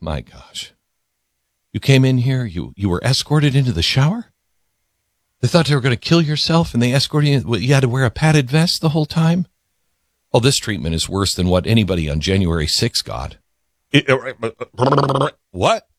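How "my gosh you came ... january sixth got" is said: dead serious, straight-faced, deadpan, low and rapid. Retelling what Faruqi said about the jail conditions: imitating Faruqi with a straight face. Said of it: "he says with a straight face".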